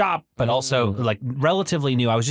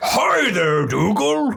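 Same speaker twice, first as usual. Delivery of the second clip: put-on old man voice, higher; 9 semitones higher than usual. Greeting Dougal while playing Santa: put-on Santa voice. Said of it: "I don't know why I sound like this".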